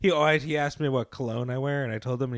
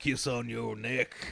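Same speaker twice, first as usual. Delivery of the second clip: put-on soft, gruff old cop voice; 8 dB quieter than usual. Retelling what a man said, in an old gruff cop voice. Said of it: "he had an old gruff cop voice".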